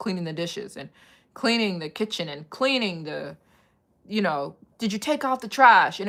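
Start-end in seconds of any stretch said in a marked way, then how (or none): 4.8-6.0 loud, nagging, scolding yell, mother voice. Retelling how a mother came home demanding a clean house: imitating mom yelling. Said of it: "she'd start yelling at us".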